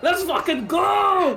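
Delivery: loud roaring war cry.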